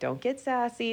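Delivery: high-pitched, scolding mom voice. Retelling how Ellie finally answered Owen's snapping during the challenge, use Ellie's mom voice. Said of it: "like in that mom voice".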